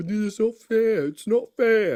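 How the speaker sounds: very high, slow, taunting, mock English accent. In a debate, a speaker mocks the other speaker's accent. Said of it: "you're making fun of my accent now?".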